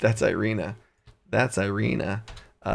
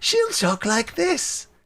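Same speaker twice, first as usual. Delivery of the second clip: stern, very high-pitched witchy villain voice. Trying out how Ophelia Wormwiggle will talk, in a female Joker voice, witch version. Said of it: "it's the Joker, but a female witch version".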